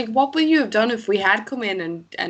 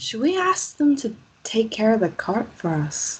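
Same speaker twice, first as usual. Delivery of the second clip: conspiratorial, hushed stage whisper. Aside to Ren while talking with the others: whispering. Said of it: "I'm gonna whisper in Ren's ear".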